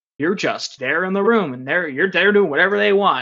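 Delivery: play-acted, heavy, complaining sarcasm. Retelling what some teachers say about rhizomatic learning: imitating a sarcastic teacher. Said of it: "say that sort of sarcastically".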